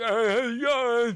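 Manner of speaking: very high, squeaky, goofy put-on voice. Teasing the other speaker about his show voice: imitating Jimmy's voice. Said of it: "You put on this voice for the show".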